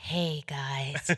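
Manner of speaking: put-on hesitant, sheepish, low, soft voice. Recalling her call to the group, the speaker imitates her, sheepish voice. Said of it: "this sheepish voice".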